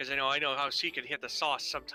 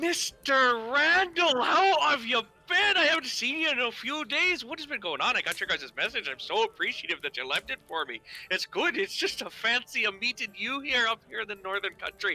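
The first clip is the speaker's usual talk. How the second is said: upbeat, friendly, bright, cheerful, sing-song voice; 9 semitones higher, 4 dB louder than usual. Voicing a familiar character greeting randall in a tavern: cheerful voice. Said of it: "cheerful voice".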